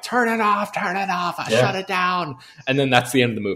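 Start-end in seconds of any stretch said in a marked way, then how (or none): 0.0-2.4 high screaming voice, acted out. Retelling the movie ending as the hero calls out: imitating a character screaming.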